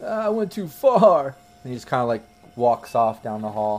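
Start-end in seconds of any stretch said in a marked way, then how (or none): 0.0-1.3 put-on high, very slow, drawn-out drunken sob. Voicing a drunk man stumbling out of a room: drunk crying voice. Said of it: "still crying".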